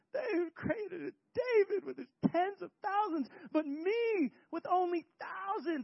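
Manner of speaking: high, whining, put-upon king voice. Acting out the king's complaint that david got more credit: imitating the king's whiny voice. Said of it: "Just imagine the whiny voice of, of the king".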